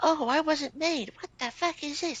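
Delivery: squeaky whine, pitched way up very high. Mocking how squeakers talk when they don't get their way, imitating squeakers. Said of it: "these squeakers, when they don't get their way, they're like".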